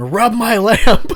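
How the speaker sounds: disembodied voice, high and loud. Speaker retells a door swinging open and a voice speaking, imitating a disembodied voice. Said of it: "hear this disembodied voice saying".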